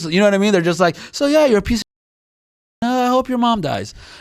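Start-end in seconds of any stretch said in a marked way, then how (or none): 1.1-3.9 offhand, chatty, breezy, pitched-up casual delivery. Imitating people on Spaces insulting someone: imitating casual insults. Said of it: "say it, like, so casually".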